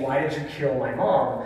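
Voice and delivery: plain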